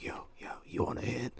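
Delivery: soft, breathy whisper under the breath. Retelling what a classmate sitting next to them in class said: retelling a whisper. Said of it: "he whispers".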